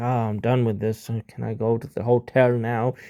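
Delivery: worn-out, bored, low, drained voice. Showing how a worn-out commentator sounds late in the show: tired, drained voice. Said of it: "in your voice, people can tell, like, you're tired".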